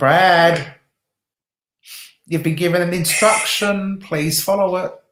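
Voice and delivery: firm, commanding stern teacher voice, one word drawn out. Telling someone to follow an instruction they were given, best teacher voice. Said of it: "I'm using my best teacher voice".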